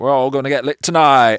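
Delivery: booming, shrill, high English radio host voice. Describing a night that felt like being inside a radio show, english radio host voice. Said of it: "very like that English radio host".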